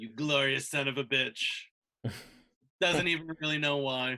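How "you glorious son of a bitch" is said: private, fond, admiring remark said to oneself. A character smiles on seeing a note saying gone adventuring: under his breath. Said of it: "under his breath he says".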